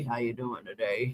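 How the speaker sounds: deep, soft, hushed radio DJ voice. Acting out how someone came up here trying to sound smooth, Quiet Storm radio voice. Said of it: "trying to sound like he was on the Quiet Storm".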